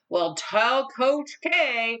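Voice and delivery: very slow, smug, cocky, condescending tone. Retelling a story: Brandon answers the rink worker, mock-cocky and condescending. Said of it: "all cocky and condescendingly".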